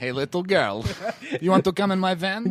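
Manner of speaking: put-on Russian accent. Joking about a man who pulls up in a van, speaks in a mock Russian accent.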